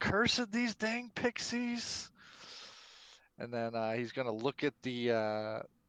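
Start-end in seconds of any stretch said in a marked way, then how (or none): 0.0-2.1 very high, shrill shout in a character voice. Voicing a character fighting an illusion, yelling out: character yelling. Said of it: "Dracaro's gonna yell out".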